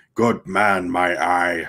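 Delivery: snapping back. A narrator reads a crewman's retort as others praise a man, snapped. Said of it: "snapped Lumpy".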